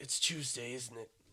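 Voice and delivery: very low-pitched, hushed British accent. Speaker told to do a British accent takes a turn, British accent.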